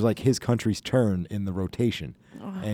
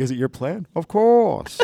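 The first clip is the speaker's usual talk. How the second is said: muffled masked villain voice, higher and louder; 7 semitones higher, 5 dB louder than usual. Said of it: "what Bane would sound like".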